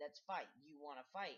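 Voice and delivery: taunting, challenging, goading tone. Speaker recounts a man on the steps challenging them; retelling a taunt. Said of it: "he's telling me to let's go fight".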